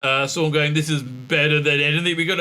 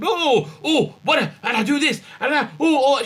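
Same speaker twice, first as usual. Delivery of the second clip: shoddy celebrity impression, high, swooping, showy; 11 semitones higher than usual. Retelling a scene where a character impersonates someone: imitating a David Tennant impersonation. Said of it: "she's making me dislike David Tennant by impersonating David Tennant".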